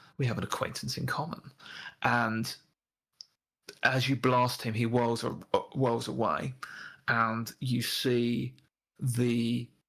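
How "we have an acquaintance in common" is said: quiet, intimate whisper. Voicing a smiling character whispering to another character: whispering. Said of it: "his lips move as he just whispers to him".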